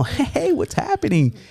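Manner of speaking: mock jovial voice, pitched way up. Retelling walking over to relatives who nicknamed him, giving a mock-jovial greeting. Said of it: "I'm all jovial".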